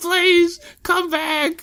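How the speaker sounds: high-pitched, desperate pleading. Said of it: "He's like".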